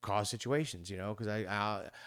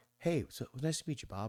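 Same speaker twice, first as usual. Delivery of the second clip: high, bright, smooth, silky customer-service voice; 5 semitones higher than usual. Greeting someone named Bob in a high, smooth customer-service voice. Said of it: "I get customer service voice. ... I go up an octave. I go real smooth".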